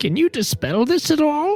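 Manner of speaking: put-on elderly woman voice. Asking Wander a question, in a put-on old lady voice. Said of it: "I say in my old lady voice".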